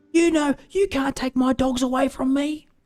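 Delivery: very high-pitched yelling scream. Retelling a man on a train screaming into his phone: imitating a man screaming. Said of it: "starts screaming on his phone".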